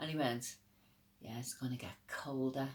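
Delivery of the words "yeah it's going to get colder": dark, ominous, menacing tone. Retelling the lurking man's reply to a remark: imitating a sinister reply. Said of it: "Real sinister, real sinister".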